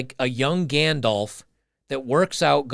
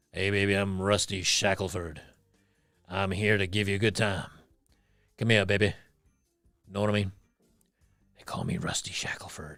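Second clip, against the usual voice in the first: low, soft, sleazy, coaxing put-on hillbilly voice; 6 semitones lower, 6 dB quieter than usual. Imagining how a donor's name could sound, 1960s hillbilly movie-creator voice. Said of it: "like a 1960s hillbilly spicy movie creator".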